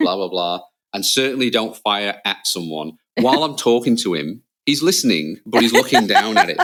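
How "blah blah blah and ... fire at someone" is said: ordinary talk, nothing marked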